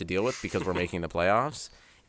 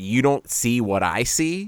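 slow, drawn-out obnoxious bravado. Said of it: "say it with this bravado of".

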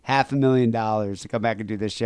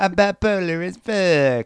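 put-on cartoon kid voice, higher; 8 semitones higher, 3 dB louder than usual. Repeating a caller's line: Cartman voice. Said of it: "Like in a Cartman voice?".

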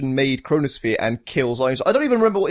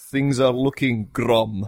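strong put-on Russian accent, lower pitch; 3 semitones lower than usual. Quoting the Russian premier's line: Tim Curry's Russian accent. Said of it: "who does the most fantastic Russian accent ever when he says".

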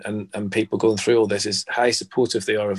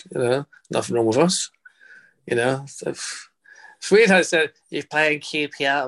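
bad, terrible put-on Liverpool accent, slower; 5 semitones higher than usual. Retelling a clip about Liverpool fans, in a terrible Liverpool accent. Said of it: "it's a terrible accent".

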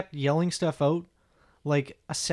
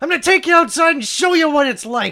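mock furious, shrill, very high and very loud; 12 semitones higher, 11 dB louder than usual. Hearing about hecklers, another speaker acts out the comedian's anger: mock-angry threat. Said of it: "Josh is getting upset!".

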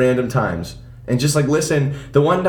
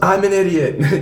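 full-throated, acted-out yell with echo; 4 semitones higher than usual. Retelling a favorite scene from a live show, yelling like Jim Carrey. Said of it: "and he yells".

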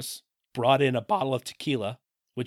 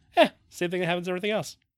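casual, jokey, throwaway delivery; 4 semitones higher than usual. Showing how the movie line should have been said: joking delivery. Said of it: "She would not do a take where she said it jokingly".

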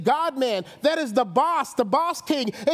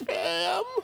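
scared, soft, wimpy little voice; 3 semitones higher, 5 dB quieter than usual. Retelling answering someone who asked what he called her, mock-timid wimpy voice. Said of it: "with the scariest, wimpy, non-man voice".

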